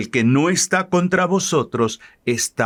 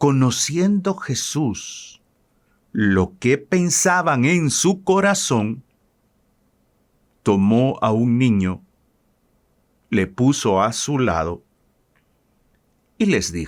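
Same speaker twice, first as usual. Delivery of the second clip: unhurried, slower reading pace. Rereading a scripture passage for listeners at home, reading more slowly. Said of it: "de una manera más despacio".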